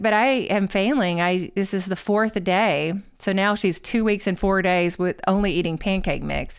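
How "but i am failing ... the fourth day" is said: ordinary talk, nothing marked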